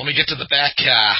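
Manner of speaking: very loud, high Boston accent. After a plea to keep Boston accents out of the script, the speaker answers in a Boston accent. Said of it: "just don't have them have a Boston accent".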